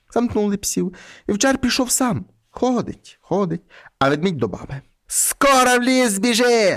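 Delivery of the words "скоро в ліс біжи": shouting, yelling, higher pitch, much slower. In a folk tale read aloud, the witch calls to the bear, shouting. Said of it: "закричала відьма".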